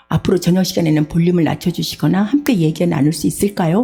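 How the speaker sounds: ordinary talk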